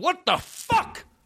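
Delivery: put-on enraged preacher voice, shrill, furious, pitched way up. Describing a progressive pastor punching his fist: imitating an angry pastor. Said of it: "He's so pissed off".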